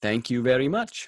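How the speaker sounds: put-on Indian accent. Thanking another speaker in the car, copying a stranger: put-on Indian accent. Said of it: "Adam's accent is much closer".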